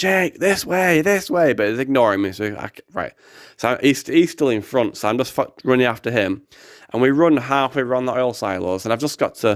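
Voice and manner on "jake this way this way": put-on high, raised shout. Speaker recounts calling after a companion around oil silos, retelling a shout. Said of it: "I'm I'm shouting like".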